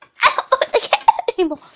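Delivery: put-on little bunny-rabbit voice, half choking. Mocking how a woman's voice sounds: imitating her choking bunny-rabbit voice. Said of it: "it sounds like she's trying to act like a freaking bunny rabbit, but choking. ... That's what she freaking sounds like".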